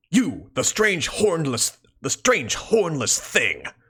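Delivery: super intense, full anime voice. Speaker showing the voice they use for Equius: super intense anime voice. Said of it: "I kind of do something like that for for Equius".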